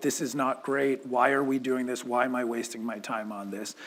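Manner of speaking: ordinary talk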